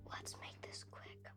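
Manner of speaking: whispered speech. Tending someone's splinter with a first-aid kit, whispering. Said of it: "Why are you whispering?".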